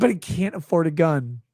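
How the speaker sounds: ordinary talk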